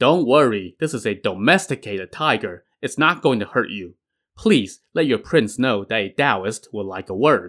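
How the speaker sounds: plain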